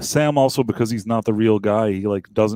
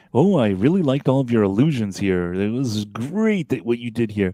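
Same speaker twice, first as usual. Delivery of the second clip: fake, mock-charming delivery. Recapping a scene, the speaker quotes a character flattering a magician: mock-charming impression. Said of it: "charm offensive here".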